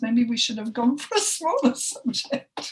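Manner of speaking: self-amused laughter breaking through the words.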